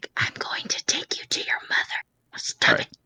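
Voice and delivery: soft, hushed whisper under the breath. Whispering to a biting creature in a game scene: whispering to a creature. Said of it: "I whisper to it".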